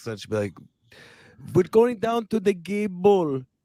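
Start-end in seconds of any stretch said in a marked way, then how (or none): 1.5-3.4 put-on German accent, pitched way up. Retelling how a woman from back then talked, in a German accent impression. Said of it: "she had a German accent".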